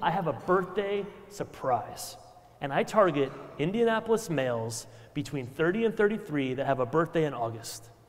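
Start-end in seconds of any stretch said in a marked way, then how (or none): none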